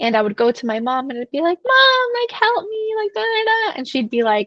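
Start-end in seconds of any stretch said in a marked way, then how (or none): 1.6-3.8 mock very high, whiny, childish, drawn-out whine. Retelling how she went to her mom as a little girl, imitating her childhood whining. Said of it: "Stop whining".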